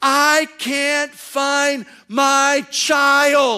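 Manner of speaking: mock very high, very slow, drawn-out scream. Retelling a young woman in a mall who lost her child, imitating her scream. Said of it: "she screams at the top of her lungs. She goes".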